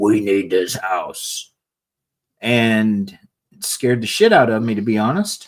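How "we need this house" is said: low, possessed demonic voice. Retelling how a partner woke the speaker at night: imitating a demonic voice. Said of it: "wakes me up with this demonic voice that says".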